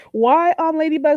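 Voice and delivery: put-on non-native Caribbean accent. Reading a woman's post aloud, non-English speaker Caribbean accent. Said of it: "in my best non English speaker Caribbean accent voice".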